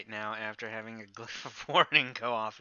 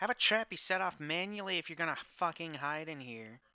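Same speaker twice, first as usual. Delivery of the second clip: loud, pitched-up voice calling out; 7 semitones higher than usual. In character, stepping through a door to address someone hidden: calling out aloud to a room. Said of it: "say aloud into the room".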